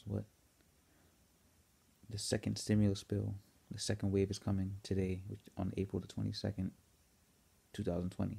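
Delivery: hushed whisper. Early morning, not wanting to wake anyone at home, telling viewers: whispering. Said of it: "I'm so sorry I'm whispering".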